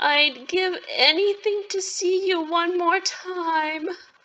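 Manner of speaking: crying through the words. Still in tears, the speaker calls out to Sylvia; crying. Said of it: "I'm actually still crying".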